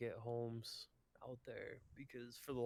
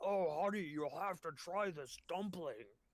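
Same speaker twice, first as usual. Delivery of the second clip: put-on, talking through mouthful of food, pitched up; 7 semitones higher, 3 dB louder than usual. Retelling what the dad said as he turned around, imitating talking with mouth full. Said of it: "he's just got his mouth full of food".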